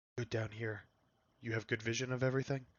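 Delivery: speaking in a whisper. Whispering into a copper wire to another player in the game: whispering. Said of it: "I just whisper".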